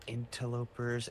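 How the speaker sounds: weary voice with audible sighing. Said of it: "she just sighs and is like".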